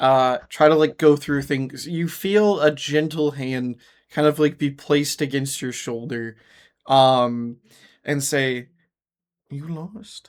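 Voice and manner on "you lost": hushed, very soft, reassuring murmur. A game narrator voices a figure placing a hand on a player's shoulder, very assuring voice. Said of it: "in a very like assuring voice".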